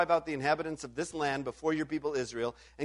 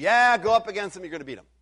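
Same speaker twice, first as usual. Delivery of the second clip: dry, mocking, insincere sarcastic tone; 4 semitones higher, 4 dB louder than usual. Retelling a prophet's answer to a king: imitating a sarcastic reply. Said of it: "he says sarcastically".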